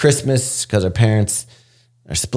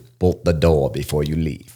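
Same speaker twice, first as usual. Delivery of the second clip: put-on British spy voice, lower pitch; 5 semitones lower than usual. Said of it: "I had a friend who did James Bond".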